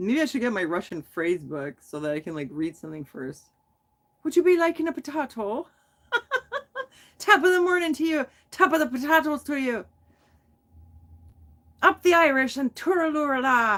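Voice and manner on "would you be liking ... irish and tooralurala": high, put-on cod Irish accent, stage-Irish style. Showing off the accents you can do, Irish accent. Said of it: "I hope I didn't offend anyone".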